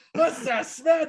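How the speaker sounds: mock elderly New York accent.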